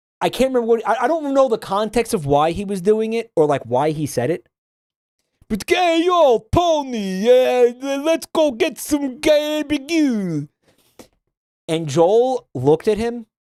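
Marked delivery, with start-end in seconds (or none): 5.5-10.5 put-on very slow, high, botched Italian gangster accent. Retelling what a guy said to Tony, in a really bad Italian gangster accent. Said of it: "really shitty, like, Italian gangster accent".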